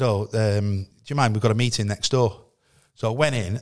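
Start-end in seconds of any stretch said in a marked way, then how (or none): none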